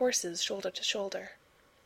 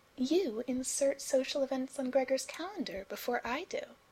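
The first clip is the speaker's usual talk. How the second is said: sugary, sweet, high-toned delivery; 5 semitones higher than usual. Alice speaks to someone about Gregor, sweetly. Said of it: "Alice said sweetly".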